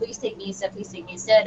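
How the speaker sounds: play-acted, sobbing, crying plea. Retelling begging the soldiers to come back: retelling own crying plea. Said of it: "screaming, crying, begging them to come back".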